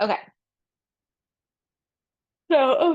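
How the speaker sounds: mid-yawn. Explaining a math exercise to listeners, yawning. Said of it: "sorry, I'm yawning".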